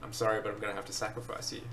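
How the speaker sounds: ordinary talk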